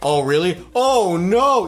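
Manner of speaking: very slow, drawn-out, overly supportive sarcastic sympathy. Describing someone who is too supportive, acting out their mock over-sympathetic sarcasm. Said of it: "too supportive, and it's like, okay, you're clearly being sarcastic".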